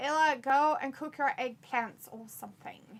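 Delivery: ordinary talk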